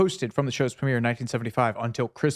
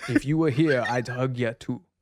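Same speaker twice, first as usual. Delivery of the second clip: put-on German-accented voice. Reading a hugger's message aloud in a Werner Herzog voice. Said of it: "the Werner Herzog voice".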